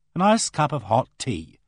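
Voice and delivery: ordinary talk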